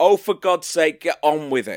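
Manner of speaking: loud, fed-up yelled outburst. Retelling a moment while watching a film: imitating own yell. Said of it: "where I yelled out".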